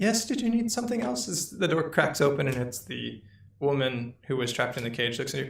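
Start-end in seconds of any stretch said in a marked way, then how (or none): 0.0-1.3 tired youthful voice, pitched up. Narrator voicing the woman from the cage answering a knock, young, tired woman's voice. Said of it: "a young, tired voice answers".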